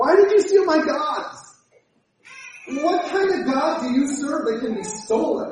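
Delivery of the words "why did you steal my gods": put-on whining little-kid voice. Repeating a man's question to mock him, mock whining like a two-year-old. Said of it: "he sounds like a whining little two-year-old".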